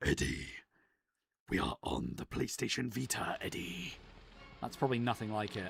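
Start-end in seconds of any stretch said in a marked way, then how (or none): 0.0-3.9 slow, drawn-out, rough monster growl. Asked to do the Tom Hardy version of the Venom voice: Venom voice. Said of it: "can you do the Venom voice, specifically the Tom Hardy version ... I'd be like".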